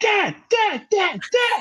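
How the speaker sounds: put-on very high, screaming child's voice. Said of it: "she's just screaming like".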